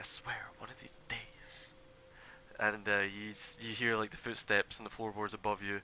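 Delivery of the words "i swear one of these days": mumbling, muttering under his breath. Narrating a scene, voicing a man upstairs, mumbling under his breath. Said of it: "mumbling under his breath".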